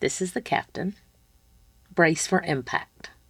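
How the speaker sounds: very hushed, calm, steady, in control. Retelling the captain's announcement over the pa system: imitating a calm, steady, in-control voice. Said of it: "the most calm, steady, in control voice I've ever heard".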